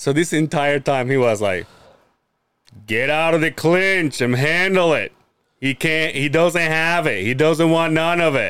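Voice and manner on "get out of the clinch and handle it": put-on thick voice. Speaker quoting what Hellbock kept saying, imitating Hellbock's thick voice. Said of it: "Hellbock already has a thick voice".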